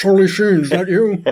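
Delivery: high, lifted voice with a questioning tone. Playing Nicolas Cage phoning his mate: Nicolas Cage voice phoning. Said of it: "that's Nicolas Cage phoning".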